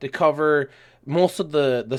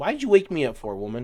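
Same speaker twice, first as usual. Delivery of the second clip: mock fed-up, irritated, grumbling tone. Retelling a reply to a lady who woke them: imitating own annoyed retort. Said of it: "That lady made me so mad".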